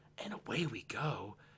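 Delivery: slow, very quiet, barely there half-whisper. Retelling what someone half-whispered while everyone was praying, half-whispered. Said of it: "I could hear him whisper go".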